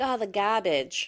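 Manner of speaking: put-on strong New England accent, heavy vowels on "garbage". Describing how their three-year-old talks: imitating a New England accent. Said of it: "has a very New England accent".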